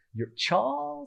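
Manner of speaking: very high-pitched tiny little Italian lady voice. Recalling being wheeled around as a baby, quote her, imitating a little italian lady. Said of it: "in that voice".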